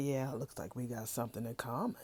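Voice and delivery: very soft, very quiet half-whisper. Retelling how Javon half-whispers to Tiffany: imitating a half-whisper. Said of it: "whispers to Tiffany".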